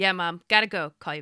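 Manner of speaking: flat, expressionless tone. Retelling a son's quick reply on the phone: imitating a deadpan reply. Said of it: "so deadpan".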